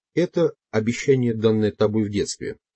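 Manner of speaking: plain reading voice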